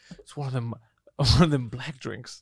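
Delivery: put-on whisper.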